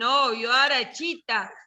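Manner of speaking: ordinary talk, nothing marked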